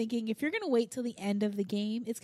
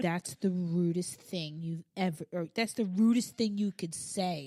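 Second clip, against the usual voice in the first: put-on disgusted tone, lower pitch; 5 semitones lower than usual. Retelling what another person said about something rude: imitating someone disgusted. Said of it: "he looks at me in, like, disgust".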